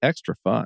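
sarcastic, ironic tongue-in-cheek tone. Adding a remark to a discussion, saying it sarcastically: sarcastic. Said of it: "I'll say it sarcastically".

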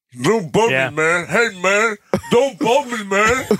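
very high-pitched, grunting, guttural voice. Reminding Chris of a coach's bit, grunting Gooby Goobs voice. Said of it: "grunt, guttural voices".

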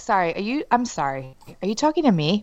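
cold-as-ice, icy, swooping delivery. Retelling what gets said at home: imitating own ice-cold tone. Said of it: "I'm cold as ice".

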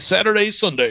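monster truck announcer voice. Announcing the conference dates, the speaker switches to a monster truck announcer voice. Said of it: "Serfiel's monster truck voice".

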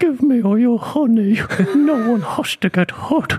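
put-on cartoon character voice, very high and slow. Impression of a mugging, Winnie the Pooh voice. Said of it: "I can also do an impression of Winnie the Pooh doing a mugging".

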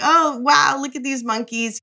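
put-on giggle, high pitch. Telling a story about the monkeys, acting out the boyfriend's reaction: retelling a giggle.

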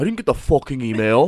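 put-on Dutch accent in English. Describing Lars complaining about a missed email, imitating Lars's Dutch accent. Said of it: "he has that like Dutch accent".

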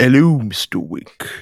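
fake low voice. Podcast co-host greeting listeners as a member of the Continental, put-on deeper voice. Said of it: "I was trying to go deeper".

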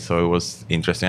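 plain

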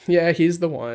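usual speaking voice

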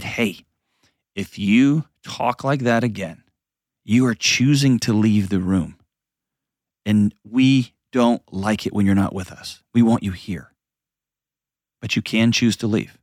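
private, close-up, voiced stage whisper. Retelling words half-whispered into a daughter's ear: retelling a half-whisper. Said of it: "I whispered into her ear".

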